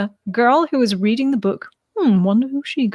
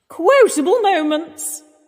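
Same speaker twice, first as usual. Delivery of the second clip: affected, knowing voice. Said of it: "So you see where I get my, uh, Julia from".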